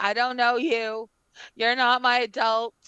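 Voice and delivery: shrill, loud, high yelling bird voice. Voicing a bird as a game master: bird yelling. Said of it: "now the bird is yelling".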